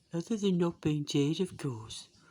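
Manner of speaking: attempted Liverpool accent that drifts into Birmingham. Quoting a man's one wish in his own accent, in a failed Liverpool accent. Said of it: "in his Liverpool accent".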